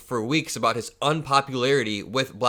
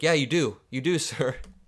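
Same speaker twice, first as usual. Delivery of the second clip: mock fawning, eager tone. Mocking a podcaster who agrees with his guest in a clip, imitating fawning agreement. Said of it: "He's like".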